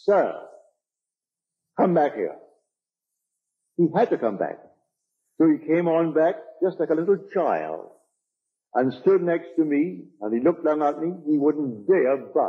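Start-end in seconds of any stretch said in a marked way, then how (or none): 0.0-2.3 calling out at full voice. Retelling calling a man back after he started to leave, full-voiced call. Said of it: "with my full voice".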